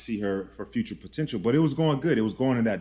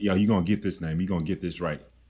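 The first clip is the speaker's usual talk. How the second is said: put-on heavy bass voice, lower; 5 semitones lower than usual. Retelling what was said on a date, imitating own heavy bass voice. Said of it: "It was straight bass".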